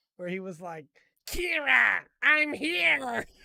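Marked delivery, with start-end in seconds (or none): 1.3-3.2 goofy, dumb, very high, loud, croaky voice. Speaker retells the voice they gave Atherin: really stupid Atherin voice. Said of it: "I gave Atherin a really stupid voice too".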